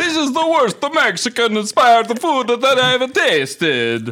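put-on high-pitched, loud Italian accent. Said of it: "now it's Italian".

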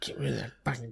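very hushed, high, aged cartoon old-woman voice. The speaker imitates their wife, in an old Marge Simpson voice. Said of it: "Why does she sound like an old Marge Simpson?".

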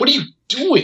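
put-on high scream.

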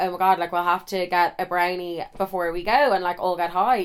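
ordinary delivery

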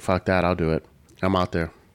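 plain

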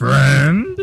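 high-pitched monster bellow. Asked to try their Frankenstein sound one more time, Frankenstein monster voice. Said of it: "try it one more time".

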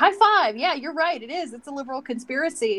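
eager, enthusiastic, agreeable tone.

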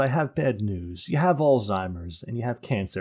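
plain

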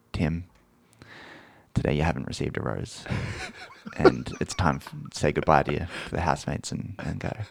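acted, solemn, sad, soft, breathy near-whisper. Retelling a man's solemn farewell to the bachelor, mock-sad and soft. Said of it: "he just says it so sadly and so softly".

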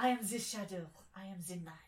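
loud, brooding, dramatic in-character hero voice. Getting into character while sneaking: dramatic in-character monologue. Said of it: "you were monologuing while, while sneaking?".

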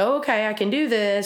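ordinary delivery

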